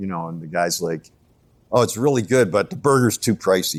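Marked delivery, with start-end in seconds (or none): 1.7-3.8 acted casual, offhand, dismissive tone. Retelling a restaurant guest's complaint about the burger price: imitating a dismissive tone. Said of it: "kinda dismissive".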